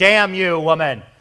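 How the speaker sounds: mock loud, angry, both-barrels scolding outburst. Retelling the story of the woman at the well, in an angry Jesus impression. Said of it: "That's my angry Jesus impression".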